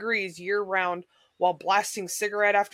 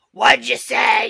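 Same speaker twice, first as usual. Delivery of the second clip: put-on full-volume, rasping old lady smoker voice; 3 semitones higher, 9 dB louder than usual. Retelling yelling close to an old lady's ear, imitating her smoker voice at full volume. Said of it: "Imagine an old lady smoker voice at full volume".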